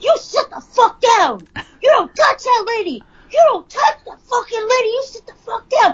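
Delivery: furious yelling, very high-pitched. Retelling a flight video where a man yells at a woman who hit someone; imitating furious yelling. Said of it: "he just flips the fuck out".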